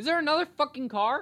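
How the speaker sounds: yelling, very loud, high and shrill. Talking about turning 17, interrupted by another car, getting loud. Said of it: "I'm getting loud".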